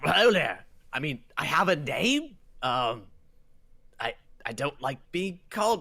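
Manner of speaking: sudden put-on English accent, in character. Voicing the Marinoloth as it answers Nomad's shouted greeting, in a British accent. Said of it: "I don't know why I'm British".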